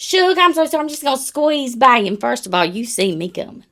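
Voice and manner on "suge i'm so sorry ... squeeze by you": fake-sweet, thick put-on Southern accent, pitched up. Describing squeezing past people on purpose, putting on a thick accent. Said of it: "I like to put that thick accent".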